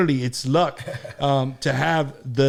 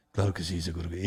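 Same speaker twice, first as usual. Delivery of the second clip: put-on voice, speaking in Spanish; 8 semitones lower, 8 dB quieter than usual. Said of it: "he always used to imitate [name]".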